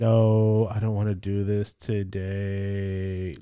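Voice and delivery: very slow, lethargic drawl, "no" drawn out. Remembering reading the comic strip as a kid, imitating lethargic Garfield voice. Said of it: "he was very lethargic".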